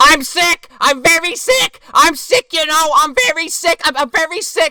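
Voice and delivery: very high, very loud screaming. Retelling a film scene, imitating a domineering mother screaming at her daughter. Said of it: "She just scream-".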